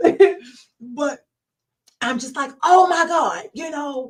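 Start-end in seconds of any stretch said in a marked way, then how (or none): 2.6-4.1 furious shouting. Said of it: "I'm yelling and I'm fussing".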